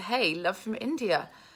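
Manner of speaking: ordinary talk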